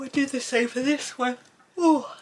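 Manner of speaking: talking mid-yawn. Colouring a tiny flame while demonstrating, speaking through a yawn. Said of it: "excuse me yawning".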